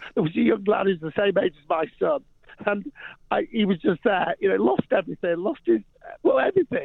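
crying through the words. Recalling a young lad met while giving toys to kids: crying while talking. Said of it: "I can't talk about this without crying".

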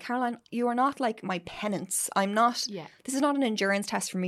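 fed-up, frustrated, exasperated tone. Retelling how a partner answered her thanks: imitating someone frustrated. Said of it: "getting frustrated".

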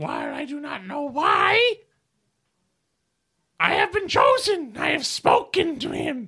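loud, high-pitched creature chief voice. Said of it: "he sits there and goes".

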